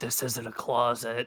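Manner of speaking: whispering voice. Leaning in to another character in a roleplay scene: whisper. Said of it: "I'm gonna lean in and whisper".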